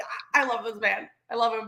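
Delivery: ordinary delivery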